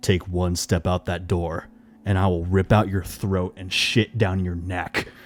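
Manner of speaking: overdone, too-deep demonic horror-movie voice. Retelling what the girlfriend said to stop the speaker leaving: too-deep horror voice. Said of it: "she says in that too deep horror voice".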